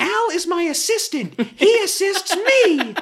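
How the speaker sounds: put-on very high-pitched, loud child voice. Imitating a child actor's imagined line about his assistant: Terran Noah Smith impression. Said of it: "Your Terran Noah Smith impression is on point".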